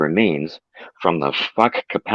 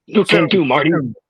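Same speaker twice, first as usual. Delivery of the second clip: voice jumping way up, very high, movie-style put-on; 9 semitones higher, 3 dB louder than usual. Reading a line of fiction aloud as Doc: Christopher Lloyd voice. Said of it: "trying to channel the spirit of Christopher Lloyd".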